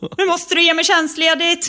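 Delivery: play-acted, very high, excited scream. Retelling phoning a boss, the speaker acts out the call, retelling a scream. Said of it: "bara skrek rätt ut".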